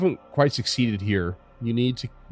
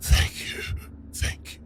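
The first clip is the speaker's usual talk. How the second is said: hoarse, rough, worn-down raspy voice. Voicing a creature with glowing eyes thanking Krucka, hoarse voice. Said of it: "in this hoarse voice".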